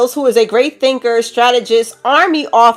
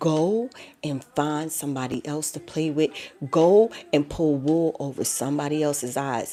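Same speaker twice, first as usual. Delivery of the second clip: hushed whisper; 9 semitones lower, 13 dB quieter than usual. Speaker addresses someone directly, whispering. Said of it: "I am going to whisper this to you".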